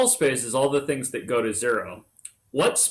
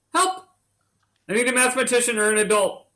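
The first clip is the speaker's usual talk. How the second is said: very high, panicky, frantic cry; 11 semitones higher than usual. Noticing a mistake mid-explanation and calling for help: mock panic. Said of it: "I'm panicking".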